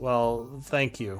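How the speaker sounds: sighing while speaking. Voicing a character who was just enlarged by magic: sighing while speaking. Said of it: "he sighs and says".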